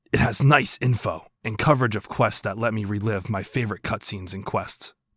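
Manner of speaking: breathy put-on character voice. Asked by a friend to read a text aloud, breathy Xiao voice. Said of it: "not a whisper, but like it's very breathy".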